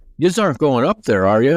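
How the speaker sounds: put-on speaking in an Irish accent. Retelling what a man said to heavy-set Americans climbing a tower, Irish accent. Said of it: "in his Irish accent".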